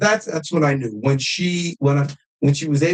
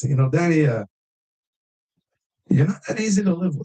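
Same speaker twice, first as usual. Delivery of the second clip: put-on light French accent; 2 semitones higher than usual.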